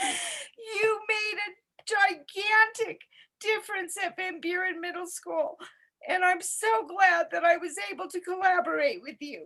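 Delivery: crying, tearful, voice breaking. Paying tribute to a woman's work at a middle school, speaker is crying while speaking. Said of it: "I'm sorry, I'm crying".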